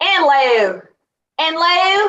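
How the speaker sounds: put-on very slow, drawn-out Southern accent. Imitating a mother who picks up accents after talking with someone from the south: imitating mother's southern accent. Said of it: "talking to somebody from the South, that would be like".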